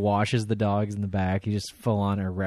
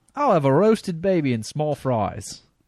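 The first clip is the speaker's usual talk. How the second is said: terrible fake English accent, high pitch; 6 semitones higher, 3 dB louder than usual. Reading a listener's story aloud, quoting the guy in a bad english accent. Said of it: "That accent was terrible".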